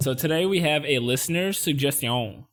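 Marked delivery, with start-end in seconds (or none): 1.5-2.3 bad, exaggerated French accent. Announcing a listener suggestion, bad french accent on suggestion. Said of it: "I say a suggestion in such a bad uh, French accent".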